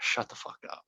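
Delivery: hushed, unvoiced whisper.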